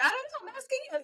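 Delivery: mock bright, positive, light, very high voice. Retelling a skit where the other texter answers: imitating a light, positive reply. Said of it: "all light and positive".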